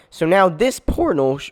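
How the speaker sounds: voice breaking mid-word. Explaining a game portal while building it, voice cracking. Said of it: "my voice cracked".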